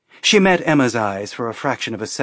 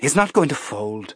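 plain reading voice

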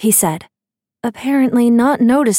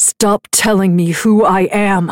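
feral snarl through the teeth. Narrator reading a fighter's line in the middle of a brawl, snarling, teeth bared. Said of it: "he snarled, teeth bared".

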